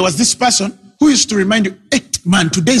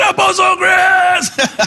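mock man's shout, pitched much higher; 11 semitones higher than usual. Retelling a man the word has cut, who can only call to the apostle, retelling a shout. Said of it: "all he can do is to shout".

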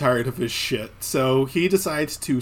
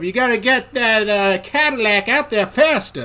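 slow, high, put-on New Orleans drawl; 6 semitones higher, 3 dB louder than usual. Describing a movie scene, play the character, imitating an obese southern man with a New Orleans accent. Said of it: "like an obese southern man with like a New Orleans accent".

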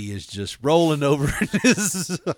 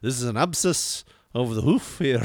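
put-on Scottish brogue; 2 semitones lower, 4 dB quieter than usual. Speaker retelling a man on a show she watched treating a hoof: imitating his scottish accent. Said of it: "he's talking in his Scottish accent".

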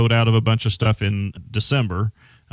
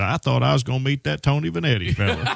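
put-on rural country accent; 4 semitones higher than usual. Retelling what a seminar guest said on arriving, in a country voice. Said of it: "he told me in his country voice".

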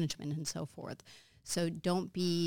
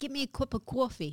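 put-on New York accent, pitched up; 8 semitones higher than usual. Host trying out accents with a guest, in a new york accent. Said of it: "That's New York".

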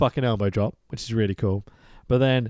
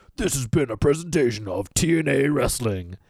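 put-on, very serious, grave delivery. Recapping a wrestling show, quoting its closing line in a mock very serious voice. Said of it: "A very serious voice goes".

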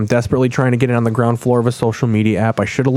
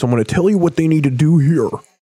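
fast, higher pursed-lip gym teacher voice. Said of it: "They got the purse lip gym teacher voice".

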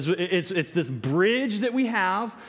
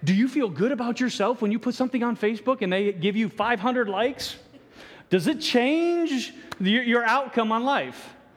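sarcastic, needling, mocking tone; 3 semitones higher than usual. Speaking to the audience and openly admitting it, mocking. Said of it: "yes, I'm mocking".

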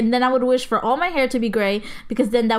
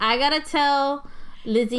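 normal talking voice

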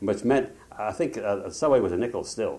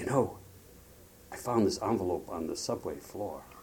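put-on whisper, quieter; 6 dB quieter than usual. Retelling what she said on coming home later: imitating someone whispering. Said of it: "she said to me in a whisper".

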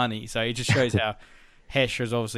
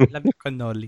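put-on Russian accent, woman's voice, louder; 7 dB louder than usual. Describing Tony's dream scene, quoting in a Russian woman accent. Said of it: "which is his Russian girlfriend's voice".

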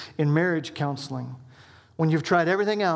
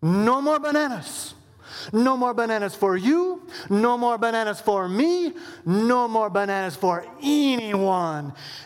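bad, weird put-on Jamaican Spanish accent; 6 semitones higher than usual. Retelling how the speaker answered her accusation, in a weird jamaican spanish accent. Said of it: "I took on this weird Jamaican Spanish accent".

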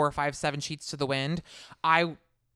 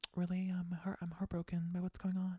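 soft, much quieter ASMR voice; 3 semitones higher, 10 dB quieter than usual. Mocking a cast member's confessional voice, doing a soft ASMR-like Noelle impression. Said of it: "It's like ASMR".

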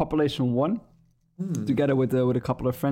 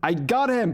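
sudden, high, raised shout; 8 semitones higher than usual. Retelling the end of a game match, imitating own shout. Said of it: "I literally shouted".

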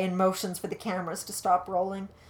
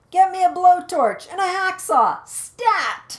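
very high, very loud, shrill and urgent shout; 11 semitones higher, 10 dB louder than usual. [name] shouts an order just before Calvin objects: shouting. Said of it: "[name] shouts".

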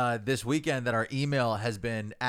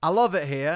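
put-on Cockney accent, raised and high-pitched; 6 semitones higher, 6 dB louder than usual. Teasing another speaker about how they talked in England, in a Cockney accent. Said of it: "You were doing the Cockney".

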